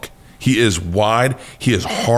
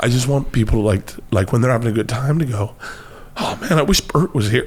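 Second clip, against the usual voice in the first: tearful crying, voice breaking. Talking about wanting to be remembered, crying while speaking. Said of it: "why am I fucking crying?".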